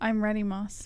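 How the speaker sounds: trying to sound sultry and seductive. Saying ready to Moss before UFC face-offs, trying to sound seductive. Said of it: "I was trying to be seductive".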